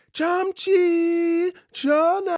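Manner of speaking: very high, drawn-out, K-drama style bellow. Retelling calling a dog back at night: bellowing in a K-drama voice. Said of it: "I bellow into the night several times over in my best K-drama voice".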